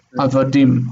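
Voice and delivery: Avadim, last syllable stressed with falling pitch. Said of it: "With the accent on the last syllable".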